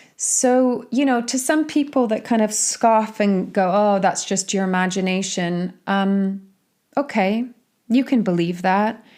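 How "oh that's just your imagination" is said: ordinary talk, nothing marked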